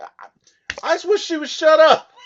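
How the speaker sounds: high, loud, exasperated outburst. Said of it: "he's like".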